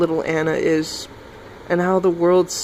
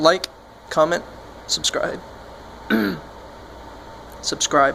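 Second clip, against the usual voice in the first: voice cracking and breaking; 3 dB quieter than usual. Speaker signing off a video, asking viewers to comment and subscribe, voice cracking. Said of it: "Sorry, voice cracked".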